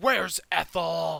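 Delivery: furious, very loud, rough raging scream. Speaker recounts Egner screaming in someone's face, retelling Egner's furious shout. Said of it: "he just shouts like".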